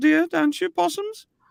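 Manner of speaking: very high voice with light Melbourne accent. Show how to do the great Dame Edna, in a Dame Edna voice with a small Melbourne accent. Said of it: "put a little small Melbourne accent on".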